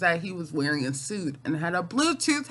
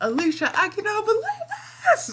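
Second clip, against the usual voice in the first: very high, thrilled, swooping, excited screaming. Retelling a man talking about a girl in a parking lot, imitating excited screaming. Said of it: "he's so excited and he's screaming".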